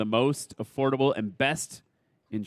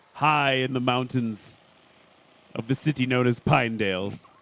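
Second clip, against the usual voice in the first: so-so, attempted put-on British accent; 4 dB louder than usual. Describing a backcountry landing spot high in the mountains, in a British accent. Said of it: "That's the best British accent I can do".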